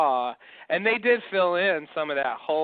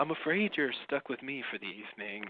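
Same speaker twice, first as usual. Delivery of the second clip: put-on late-night radio DJ announcer voice; 3 semitones lower, 9 dB quieter than usual. Imitating how he turns on a radio voice, like a night show: late-night radio voice. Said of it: "he turns on this like radio voice".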